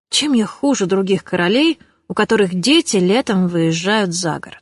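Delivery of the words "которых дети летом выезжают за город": ordinary delivery, nothing marked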